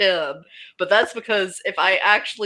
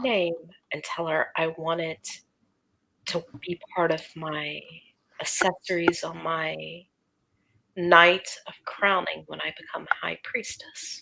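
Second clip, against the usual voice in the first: soft, hushed, secretive whisper; 3 semitones lower, 8 dB quieter than usual. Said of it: "I'm gonna whisper to Cora".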